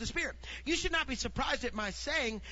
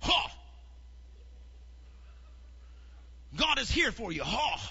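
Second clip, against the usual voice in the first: drawn out, with hawked, throaty ha's. Mocking how some people comfort someone who is hurting, doing a God voice. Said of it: "do your God voice".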